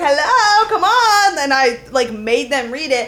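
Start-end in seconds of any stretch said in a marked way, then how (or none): 0.0-1.4 shrill, very high, loud calling yell. Retelling trying to make people read a sign: imitating her own loud yell. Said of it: "that was probably so loud into that mic".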